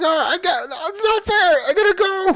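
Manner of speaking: screaming. Voicing a scared character screaming at the professor, screaming. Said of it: "is screaming at the professor".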